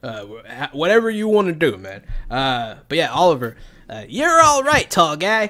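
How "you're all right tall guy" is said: high, loud cartoon voice with swooping pitch. Voicing a halfling who greets a tall player: South Park-style voice. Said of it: "I'm getting a little South Park with that voice".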